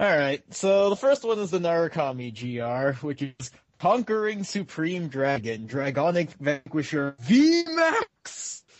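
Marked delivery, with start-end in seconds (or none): 7.2-8.6 hyped, ramped-up burst, loud and very high. Reading out a card name in all caps, ramped-up voice on VMAX. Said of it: "he had to ramp his voice up".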